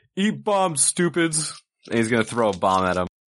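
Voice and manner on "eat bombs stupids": high-pitched hollered yell in character voice. Declaring a character's battle cry while throwing a bomb: yelling in character. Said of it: "G's gonna yell".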